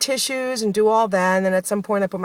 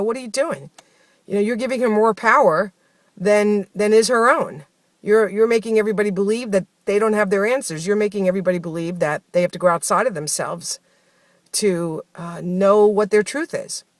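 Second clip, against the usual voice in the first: ordinary talk, nothing marked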